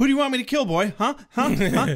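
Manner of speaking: impatient outburst. Retelling a character's line to a captive: imitating an impatient blurt. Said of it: "not having any patience whatsoever, blurts out".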